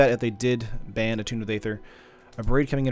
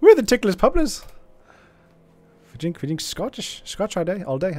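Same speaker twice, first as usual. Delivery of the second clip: botched put-on Irish accent, pitched up; 8 semitones higher, 3 dB louder than usual. Joking about a viewer's gang name, attempting a bad irish accent. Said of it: "I can't do Irish accent".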